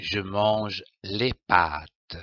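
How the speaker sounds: voice drops to a falling tone on final pâtes. Reading a sentence aloud as an example to copy: falling voice at the period. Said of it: "Il faut la lire en baissant la voix au point, comme ceci".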